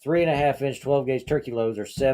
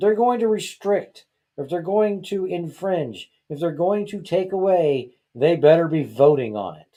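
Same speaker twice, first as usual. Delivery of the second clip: worked-up, emotional, a little heated and upset; 4 semitones higher than usual. Speaker admits getting emotional talking about something read weeks ago, a little heated. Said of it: "I'm a little heated".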